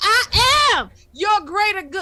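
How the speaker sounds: loud, slow shout. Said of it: "And I was like".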